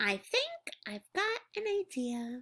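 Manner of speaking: small, soft, squeaky voice with swooping pitch. Reading a story aloud, voicing the duckling's line in a soft squeaky voice. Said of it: "my voice was softer and squeakier".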